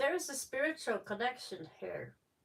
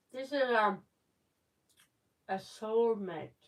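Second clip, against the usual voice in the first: mouth full, chewing, slower pace; 3 dB louder than usual. Mid-conversation, speaking with a mouth full of licorice. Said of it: "I got my mouth full of licorice".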